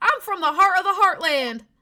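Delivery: put-on very loud, high, imperfect country accent. Voicing a game character's dialogue line: slightly off country accent. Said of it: "My country accent's a bit off".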